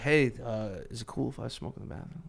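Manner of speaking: sweet, courteous delivery. Retelling a request from a guest backstage: real nice Kevin Smith voice. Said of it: "real nice, like, Kevin Smith voice".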